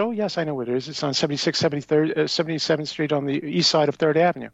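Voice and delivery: ordinary delivery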